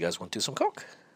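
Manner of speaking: mock nonchalant, casual and offhand delivery. Retelling how a man behind a desk offered something: imitating a casual, uncaring offer. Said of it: "just straight up, like, just didn't care".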